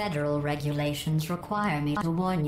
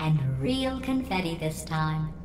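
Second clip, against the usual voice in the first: ordinary talk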